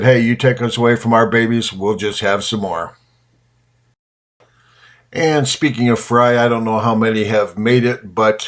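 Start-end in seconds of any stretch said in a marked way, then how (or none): none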